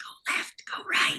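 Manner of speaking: soft, hushed whisper. Retelling how a castmate helped with stage directions: imitating Macy whispering. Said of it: "So Macy would whisper in my ear, like".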